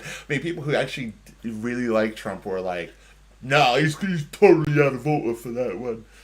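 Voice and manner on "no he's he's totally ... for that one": terrible put-on English accent, loud and high. Quote what people who really like Trump said about him, in a terrible English accent. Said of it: "that was a terrible, terrible English accent".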